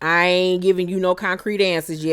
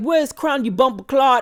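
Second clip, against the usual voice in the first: acted Jamaican accent, higher pitch; 7 semitones higher than usual. Retelling two Jamaican men barging into a studio, imitating a Jamaican accent. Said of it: "these two Jamaican motherfuckers barge up".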